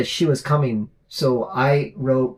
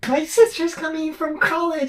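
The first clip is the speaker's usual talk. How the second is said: put-on child voice, much higher in pitch. Retelling what a little boy from her youth group used to say, imitating Daniel's high child voice. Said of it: "He had a really high voice".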